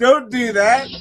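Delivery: mock desperate, high, loud wailing plea.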